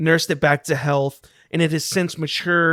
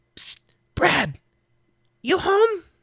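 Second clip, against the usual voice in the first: high, squeaky stage whisper; 13 semitones higher than usual. Voicing a character calling down into a pit: half-whispering. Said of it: "whispers down".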